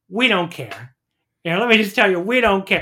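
blunt, dismissive, flat delivery. Retelling a clip of a pundit looking at the camera: Stephen A Smith impression. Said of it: "that Stephen A Smith, like, clip come to life where he's like".

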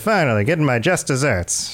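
put-on old-timey, vintage movie-style delivery. Describing a man at a desk holding a cigar, talking like an old movie. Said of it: "he's talking like an old movie".

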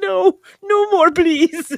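very high, frightened, scared voice. Retelling how John Kay reacted to a plate of gristle, imitating him scared. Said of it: "He's like all scared".

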